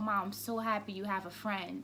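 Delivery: ordinary delivery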